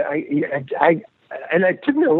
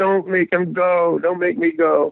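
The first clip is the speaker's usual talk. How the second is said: mock, imitated pleading, begging tone; 3 semitones higher than usual. Retelling how you begged your aunt, retelling a pleading request. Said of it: "I begged my aunt".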